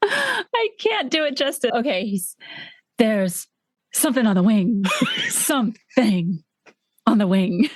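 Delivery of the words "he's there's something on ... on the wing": swooping, distinctive line reading. Asked to say a Twilight Zone line his way, imitating the actor's signature delivery. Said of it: "the way he says this the first time".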